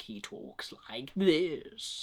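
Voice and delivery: slow, drawn-out, breathy voice with odd inflections. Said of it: "some of the inflections are just a bit weird".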